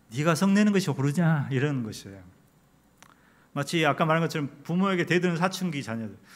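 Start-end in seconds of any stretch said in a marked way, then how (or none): 0.1-1.4 play-acted, kindly, gentle, coaxing chiding tone. Acting out god's words from scripture: acting gently admonishing. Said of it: "타일르셨을 것 같아요".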